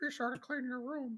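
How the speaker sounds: high-pitched voice sounding glum and depressed. Joking with the others about a podcast episode: Jordan Peterson impression. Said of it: "That's my Jordan Peterson impression".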